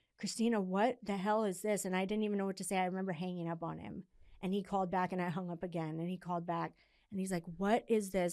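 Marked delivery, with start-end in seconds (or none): 0.2-1.9 mock near-tears, tearful voice. Retelling her dad calling about her ads, imitating him on the verge of tears. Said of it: "he was like on the verge of tears".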